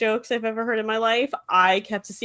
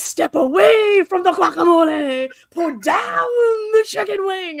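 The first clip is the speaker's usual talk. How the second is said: put-on loud, drawn-out preacher-style shout; 10 semitones higher, 7 dB louder than usual. Retelling what he said at his halftime show: imitating a preacher-style shout. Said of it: "shouting like he was a Southern Baptist preacher".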